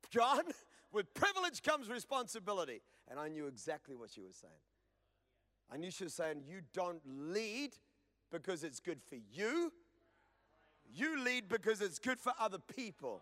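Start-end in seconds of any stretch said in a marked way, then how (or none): none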